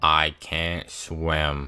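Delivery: put-on flat voice. Retelling fighting for his life in the water, the speaker quotes Ben: imitating Ben's monotone. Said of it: "in the most monotone voice".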